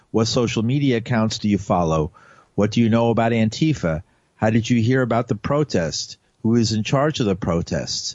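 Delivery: ordinary talk, nothing marked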